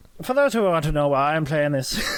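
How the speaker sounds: attempted Scottish accent, sounding Irish. Speaker explains to viewers why they are playing, in a put-on Scottish accent. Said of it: "You trying to do an Irish accent?".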